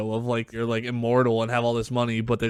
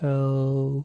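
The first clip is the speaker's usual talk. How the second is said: put-on slow, drawn-out sloth voice; 2 semitones higher than usual. Podcast co-host answers the intro hello as a bit, in a slow sloth voice. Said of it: "Why did you say it like that?".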